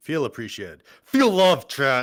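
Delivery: fully aggressive delivery. Speaker addressing chat, in an aggressive tone. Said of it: "in that aggressive, passive aggressive tone".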